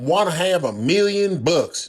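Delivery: ordinary delivery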